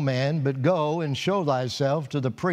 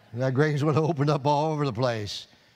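plain

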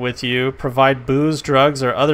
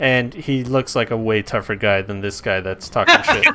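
normal talking voice

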